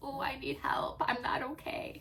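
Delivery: pitiful put-on needy dog voice, high and slow. Voicing a dog that acts sick and needy: put-on pathetic dog voice. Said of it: "she gets really, um, like, pathetic".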